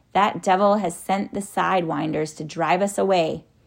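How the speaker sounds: ordinary delivery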